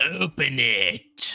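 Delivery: growled delivery. The narrator voices someone behind the wooden doors, in a growling voice. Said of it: "You hear a growling voice that says".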